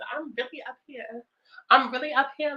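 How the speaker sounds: put-on high valley girl voice, New York accent dropped. Describing how her voice changes with the lashes on; high valley girl voice. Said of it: "My voice be like real up here, like a valley girl".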